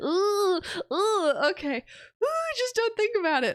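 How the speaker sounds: very high, flustered and embarrassed muttering. Explaining a game on stream, embarrassed, can't talk normally.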